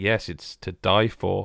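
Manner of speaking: mock deadpan monotone. Imitating the bald character's reply in a later level: mock deadpan monotone. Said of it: "deadpan voice".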